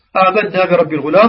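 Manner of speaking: normal talking voice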